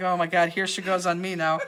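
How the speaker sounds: put-on, spoken through a laugh, amused. Imagining how a staff member reacts at home: imitating Peggy laughing. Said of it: "Peggy right now is laughing like".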